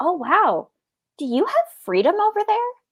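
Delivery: dead serious, earnest. Retelling a cashier's question to a german customer: imitating a very serious question. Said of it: "very seriously".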